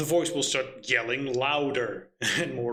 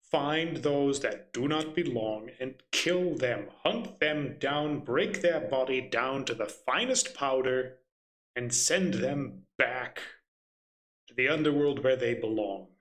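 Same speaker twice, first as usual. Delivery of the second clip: ordinary delivery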